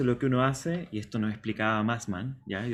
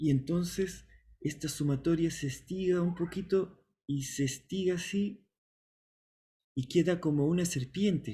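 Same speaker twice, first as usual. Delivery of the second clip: put-on German-accented, lecturing voice; 4 semitones higher than usual. Retelling a former professor's class explanation: imitating Massman's German accent. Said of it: "Massman hablaba con acento alemán".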